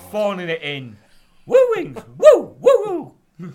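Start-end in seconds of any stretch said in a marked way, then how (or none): 1.5-3.5 booming, high-pitched, slow, swooping, drawn-out woos. Joking that a wrestler is phoning it in: bad Ric Flair impression. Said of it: "I can't do a good Ric Flair impression".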